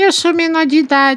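tiny, thin, squeaky voice, very high. Retelling a scene where a giant hooded man answers, thin little voice. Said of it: "responde com uma voz fininha assim".

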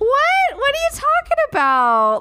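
fake put-on voice, very high and swooping.

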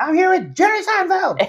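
mock very high, thrilled, excited showbiz host voice. Describing a comedian's interview persona, imitating excited Jiminy Glick. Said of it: "he was just like really excited".

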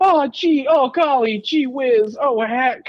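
very high, drawn-out, fake mild exclaiming. Mocking how the people in the film talk: imitating fake mild exclamations. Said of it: "just that sort of fake".

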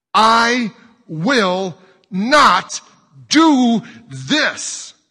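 very loud, very high, slow, shrill drawn-out yell. Mac answers her insistence, yelling. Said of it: "Mac yelled".

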